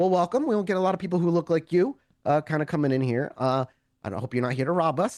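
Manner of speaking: pleasant, light, joking voice. Voicing a librarian joking with a first-time visitor: pleasant smiling voice. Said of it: "with a pleasant smile".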